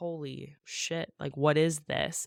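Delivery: slow, put-on frightened, terrified disbelief. Retelling a book scene, voicing a caught character: imitating a terrified character. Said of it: "he's obviously terrified".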